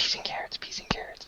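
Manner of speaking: hushed whisper. Voicing a character whispering to his friend: whispering. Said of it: "You hear him whispering over there".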